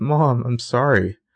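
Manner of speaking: mock guilty little-girl voice on the edge of tears. Recapping a TV scene, voicing Spencer apologizing to her mom, imitating Spencer near tears. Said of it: "she's near tears".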